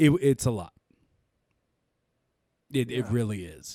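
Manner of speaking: upset-sounding voice. After losing most of a project, the speaker admits emotion audible in voice. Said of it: "I'm sure you can hear in my voice".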